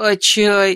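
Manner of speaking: slightly whiny voice. The narrator reads Tadeusz's short question to Agata: slightly whiny voice. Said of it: "спросил слегка плаксивым голосом".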